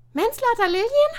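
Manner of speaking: shrill, very high, very loud astonished cry. Narrating a story, a girl exclaims to a boy in the schoolyard, astonished. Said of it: "rief sie erstaunt aus".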